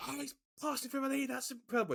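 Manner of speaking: yelling at full volume. Speaker showing how an overexcited commentator calls a minor pass: shouting excitedly. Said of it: "you literally go to the top of your lungs".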